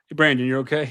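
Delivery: play-acted, bored, flat, half-hearted, unenthusiastic tone. Imitating a wrestler checking on a fallen opponent: imitating Nick sounding unenthusiastic. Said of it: "Nick sounded so, like, unenthusiastic".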